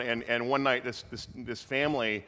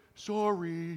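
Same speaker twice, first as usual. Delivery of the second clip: put-on meek, embarrassed, sheepish voice, pitched up; 6 semitones higher, 4 dB quieter than usual. Retelling the campers' reply after being shouted at: imitating a sheepish apology. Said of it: "this kind of sheepish".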